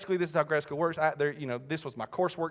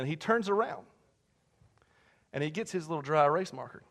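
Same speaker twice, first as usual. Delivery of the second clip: usual speaking voice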